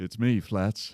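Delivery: clumsy, unconvincing country drawl attempt. Voicing a character introducing himself, failed country accent. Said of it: "Shit, that's not country at all".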